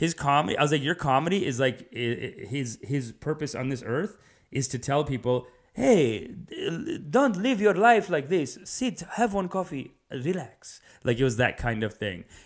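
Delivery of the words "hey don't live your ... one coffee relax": put-on Middle Eastern accent, pitched up. Act out a comic's message to people, as Sandro Veri in a Middle Eastern accent. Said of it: "I'm just giving him a Middle Eastern accent".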